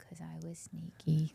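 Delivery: sheepish, soft whisper.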